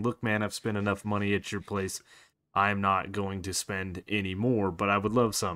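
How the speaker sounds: normal talking voice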